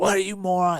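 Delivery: mean, angry screaming, pitched high. Retelling how she came from the back and screamed at them, a scream. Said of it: "she's screaming at us".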